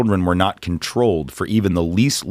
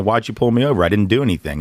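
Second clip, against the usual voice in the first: usual speaking voice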